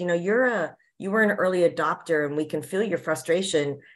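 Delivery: plain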